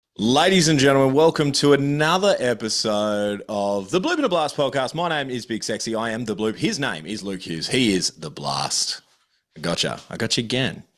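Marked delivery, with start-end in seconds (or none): 0.2-9.0 auctioneer-style patter and cadence. Opening the podcast episode as a joke: auctioneer-style delivery. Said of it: "I went all auctioneer on you".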